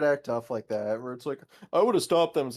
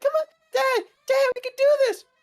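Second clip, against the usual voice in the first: put-on very high, loud little-kid voice; 6 dB louder than usual. Speaker imagines a kid urging his dad on; little kid voice. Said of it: "I'm just imagining a little kid like".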